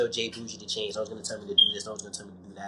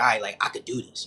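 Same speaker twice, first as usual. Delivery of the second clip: plain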